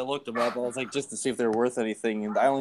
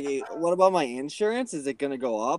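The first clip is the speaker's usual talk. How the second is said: uptalk rising at the ends of insurance and up; 3 semitones higher than usual. Retelling a woman's phone call, imitating rising uptalk. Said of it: "put the inflectuation at the end of every sentence".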